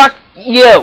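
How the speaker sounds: yelling angrily, furious shout. Yelling at the game after a bad turn: yelling angrily. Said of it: "I'm glad no one's home".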